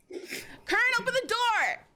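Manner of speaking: very high, shrill shouting. Voicing a character banging on a locked door: shouting in character. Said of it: "Adriel bangs on the door".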